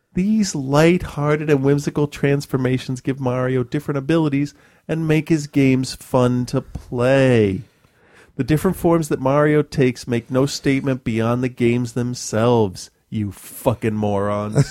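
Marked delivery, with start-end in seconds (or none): none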